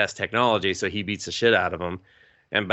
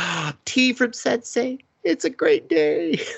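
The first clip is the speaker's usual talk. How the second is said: put-on giddy, doting voice, very high and slow. Retelling a show scene where a character receives tea: imitating a happy lovey-dovey character. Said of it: "He just gets all happy and lovey-dovey".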